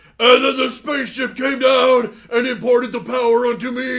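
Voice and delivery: very loud, high-pitched, all-out promo yell. Quoting an old wrestling promo: Ultimate Warrior promo voice. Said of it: "he goes".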